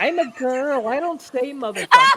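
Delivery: drawn-out, mocking granny voice, high and swooping. Mocking another speaker by quoting her own words back: imitating a grandmother. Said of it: "but then the next minute be like".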